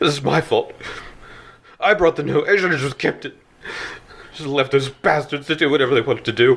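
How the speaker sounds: high, sobbing, weeping through the words. A father over his son's body blames himself, weeping. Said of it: "he's just weeping over the body of his son".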